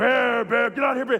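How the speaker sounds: demonic voice, like something possessed. Retelling a bear encounter, imitating Elena Bascom's demonic voice. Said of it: "but that demonic voice".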